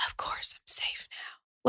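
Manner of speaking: put-on whisper. Imitating a man on a recording: imitating his whisper. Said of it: "he whispers so much of it".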